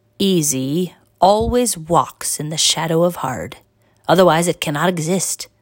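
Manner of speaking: ordinary delivery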